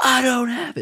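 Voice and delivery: mock yelling, very high pitched. Retelling what a woman said to a man demanding his pipe: imitating someone yelling. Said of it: "like, yelling at it".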